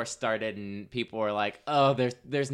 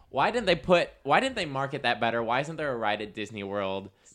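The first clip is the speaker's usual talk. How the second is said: plain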